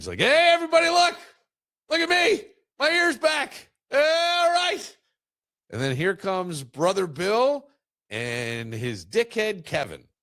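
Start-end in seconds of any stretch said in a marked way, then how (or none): 0.2-5.0 put-on shrill, very high, loud, thrilled exclaiming. Comic retelling of a man skipping back into his village, acting out an excited outburst. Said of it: "He's excited".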